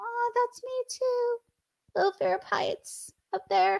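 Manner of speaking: soft voice jumping way up high. Admitting a little fear of heights, the speaker's voice goes high. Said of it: "I don't know why my voice got so high".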